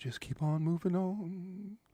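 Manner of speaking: very soft, with the word "on" drawn out.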